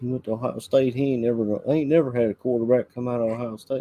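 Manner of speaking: put-on country accent. Recalling fans' reactions to a drafted quarterback, in a country accent. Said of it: "I don't know why I gave a country accent".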